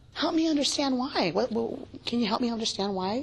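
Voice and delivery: gentle, open, soft tone.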